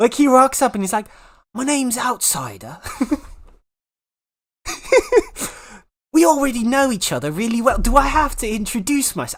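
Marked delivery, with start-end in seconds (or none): 1.5-9.4 exaggerated mock British accent, higher pitch. Imitating a game character as he introduces himself: imitating a painfully British voice. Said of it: "he is so painfully British".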